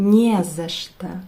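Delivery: не за что run together as one word, stress on не. Teaching the Russian phrase не за что: stress on first syllable не. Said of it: "we pronounce it like one and make the stress on the first syllable".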